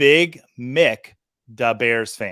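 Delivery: very slow, deliberate, careful, drawn-out reading. Host reading aloud a name they fear mispronouncing: reading very slowly. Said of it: "I'm going to read it very slowly".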